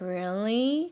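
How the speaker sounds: really, pitch climbing strongly upward at the end. Explaining the rising tone with an example: rising pitch on really. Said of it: "Rising tone is like when you say".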